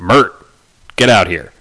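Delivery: calling out from offstage. Game narrator voices a character who walks into the back, calling from the back room. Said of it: "you hear him go".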